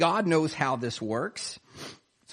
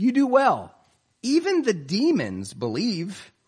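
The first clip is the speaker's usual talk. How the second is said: play-acted sarcasm, slow and swooping in pitch; 4 semitones higher than usual. Explaining a passage, the speaker quotes James: retelling a sarcastic remark. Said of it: "He's being sarcastic here".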